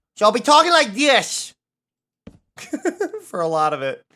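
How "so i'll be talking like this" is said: very high, loud, silly little guy voice. A streamer tells viewers about tonight's stream, in a silly little weirdo voice. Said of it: "silly little weirdo voice".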